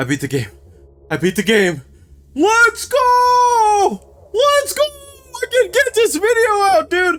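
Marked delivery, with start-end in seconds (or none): 2.3-7.2 high, tearful, crying triumphant shout. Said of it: "There's actually a tear in my right eye".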